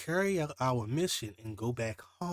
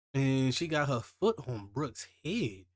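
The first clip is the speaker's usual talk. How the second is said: normal talking voice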